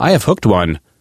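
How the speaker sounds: ordinary talk, nothing marked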